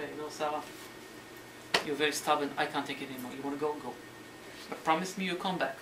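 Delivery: normal talking voice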